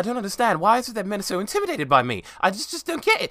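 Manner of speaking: put-on loud, high-pitched, terrible laid-on British accent. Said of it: "it's a terrible British accent".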